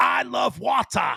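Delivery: high, slow, yelled Boston accent.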